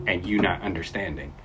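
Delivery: ordinary delivery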